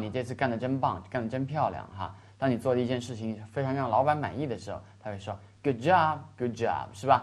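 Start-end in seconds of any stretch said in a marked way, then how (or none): none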